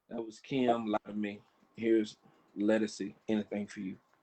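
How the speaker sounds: mock worn-out, exhausted, very low flat drone. Retelling doing a radio show with barely any strength: imitating own exhausted weak voice. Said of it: "I'm on the radio going".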